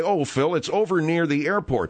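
plain

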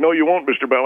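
plain

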